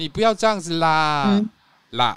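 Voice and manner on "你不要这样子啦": Taipei-style drawn-out final syllable, much higher. Explaining how Taipei girls talk, demonstrating a Taipei girl's trailing final syllable. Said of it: "她后面会有个尾音".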